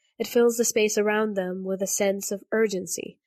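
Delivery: ordinary delivery, nothing marked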